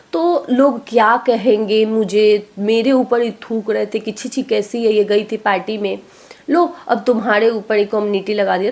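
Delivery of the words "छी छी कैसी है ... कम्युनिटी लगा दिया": normal talking voice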